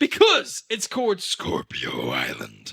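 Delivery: very deep, swooping sea-captain voice. In a made-up bit, the captain answers Smithy's question in a deep captain voice. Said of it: "with a deep voice".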